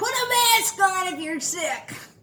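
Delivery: high, shouted yell. Retelling what a lady yelled about coughing: imitating a lady yelling. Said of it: "one lady yells out".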